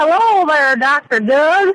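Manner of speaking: put-on hillbilly accent voice. Debbie, asked to say hello to dr. doug, greets him in her hillbilly voice. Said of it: "she's got her hillbilly voice".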